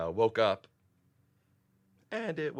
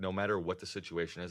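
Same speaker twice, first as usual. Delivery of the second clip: usual speaking voice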